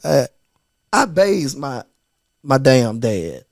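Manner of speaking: choked-up voice catching with emotion. Talking about caring for a father, getting emotional. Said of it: "I'm getting emotional".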